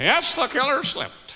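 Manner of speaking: put-on tourist voice. Speaker shows off what he calls his tourist voice, in a tourist voice. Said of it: "That's my tourist voice".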